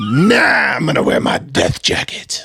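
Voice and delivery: feisty, creaky, rough, very slow drawl. Imitating a friend refusing a life jacket: imitating Steph, feisty and gravelly. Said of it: "it's a great impersonation of me".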